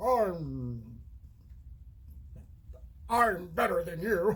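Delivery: snooty, upper-crust voice with a drawn-out "I'm". Speaker demonstrating the voice they give Mirage: upper-crust Mirage voice. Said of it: "a little more of that upper crust kind of".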